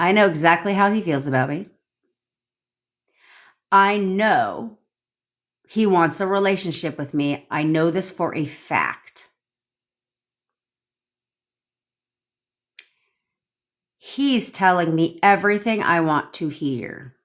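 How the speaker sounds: slow, deliberate pace. Repeating the three phrases for viewers who asked: speaking slowly. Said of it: "Let me speak slowly".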